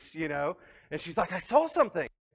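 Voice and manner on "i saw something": sudden, high, loud half-shriek of alarm. Retelling the wife spotting movement during a movie: imitating a shriek. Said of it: "she kinda shrieks".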